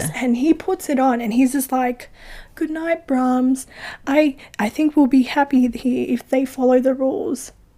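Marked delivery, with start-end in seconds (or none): 2.6-7.5 mock creepy delivery. Retelling a film scene, imitating the kid's line: creepy voice. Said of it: "he says it in a fucking creepy way".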